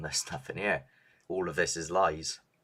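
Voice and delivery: ordinary talk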